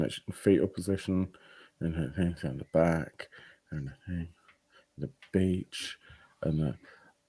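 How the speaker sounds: muttering to self. Thinking aloud while others talk, mumbling to self. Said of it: "What are you mumbling about?".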